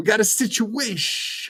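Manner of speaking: bad put-on mobster voice, pitched very high. During banter about impressions, the speaker does a horrible Tony Soprano. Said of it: "that's my horrible Tony Soprano".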